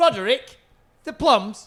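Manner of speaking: mock offhand, careless, loud dismissive shout. Retelling a man shouting in a shop as if he'd forgotten: imitating a dismissive shout. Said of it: "I heard that he shouted".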